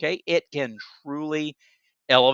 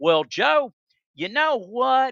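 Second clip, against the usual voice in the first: put-on Alabama accent with very high-pitched voice; 9 semitones higher, 4 dB louder than usual. Speaker quotes a man from Alabama in a put-on Alabama accent. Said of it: "You ought to hear my Alabama accent".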